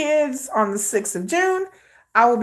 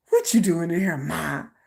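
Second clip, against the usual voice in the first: character voice of a cat; 5 semitones lower than usual. Retelling the cat pushing the door open: imitating her cat talking. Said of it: "he pushed my door open like".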